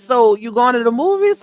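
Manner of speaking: ordinary talk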